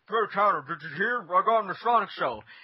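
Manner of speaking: talking through half-chewed food. Retelling what someone said at lunch, mimicking talking with mouth full. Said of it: "with a mouth half full of a sandwich".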